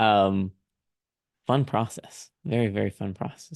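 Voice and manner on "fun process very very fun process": deadpan, dry sarcasm, meaning the opposite. Remarking on querying agents to another author: sarcastic. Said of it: "I'm being sarcastic".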